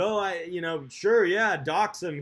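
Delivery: cocky, arrogant, haughty tone. Mimicking someone he disagrees with: imitating an arrogant attitude. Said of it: "this whole arrogant attitude".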